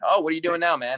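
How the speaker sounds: relaxed conversational voice. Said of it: "a bar stool conversation".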